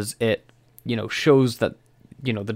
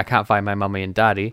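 put-on crying little boy voice; 2 semitones lower than usual. Retelling a scene where a lost little boy cries: imitating Sandeep crying. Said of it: "he's sitting there crying".

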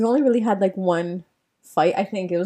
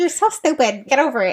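higher-pitched, scolding mom voice; 6 semitones higher, 3 dB louder than usual. Recounting a talk with her mom about it, the speaker is imitating her mother. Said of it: "This is how I imitate my mother".

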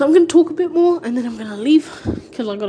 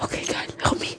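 hushed, whispered horror-movie voice. Acting out a kidnapped person whispering on the phone: mock horror movie whisper. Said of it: "horror movie whispering".

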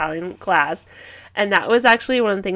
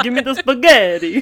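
mock Italian accent, louder; 3 semitones higher, 5 dB louder than usual. Picturing going in there now and ordering, in a mock Italian accent. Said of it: "That's a different accent".

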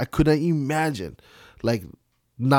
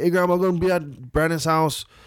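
light, mild, put-on shouting voice; 4 semitones higher than usual. Retelling calling out to grandma on getting home: imitating own past shouting. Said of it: "kinda shouting to my grandma".

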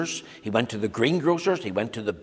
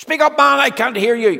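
very loud, very high, shrill bellowing yell; 12 semitones higher, 9 dB louder than usual. Narrator reading the grocer's line to a customer, bellowing. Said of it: "bellowed the grocer".

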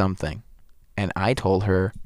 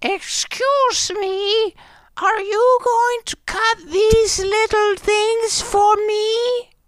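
put-on woman's voice, very high pitched; 4 dB louder than usual. Telling a story, imitating exactly how a woman asked this. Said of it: "That's exactly how she said it".

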